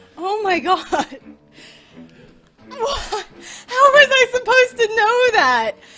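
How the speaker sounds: loud, slow laughter close to crying. Playing a game on stream, unable to stop laughing, close to tears. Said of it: "I can't stop laughing and feeling like crying".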